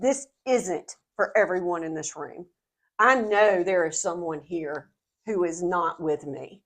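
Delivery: ordinary delivery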